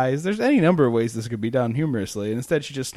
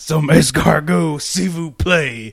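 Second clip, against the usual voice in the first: grunty halting wrestler voice, louder; 5 dB louder than usual. Imitating Hulk Hogan ordering food in French: Hulk Hogan voice. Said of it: "Hulk Hogan's grunty, halty English".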